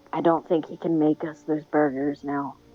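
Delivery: quiet, hushed half-whisper in character voice. Leaning toward Crimson beside a body and half-whispering in character: half-whispering in character. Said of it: "lean towards Crimson and whisper".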